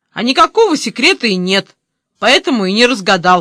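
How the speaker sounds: curt, sharp, bitten-off snapping retort. A boy mocked by another boy over a secret, snapping back. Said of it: "огрызнулся Коля".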